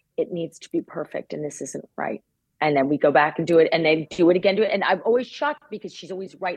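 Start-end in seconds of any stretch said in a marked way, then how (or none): 0.2-2.3 quiet, soft, somewhat faster. Speaker retells what she said while they redid their work, quietly. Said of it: "She just quietly says".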